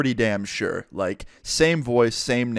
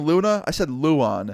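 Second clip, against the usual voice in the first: ordinary talk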